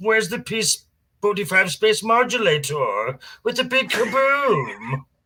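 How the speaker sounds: high, swinging pitch. A voice actor, asked what other voices they do, demonstrates a Marvin the Martian voice. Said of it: "the Martian".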